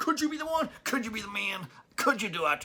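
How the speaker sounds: bad put-on American accent. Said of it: "I can't do the accent".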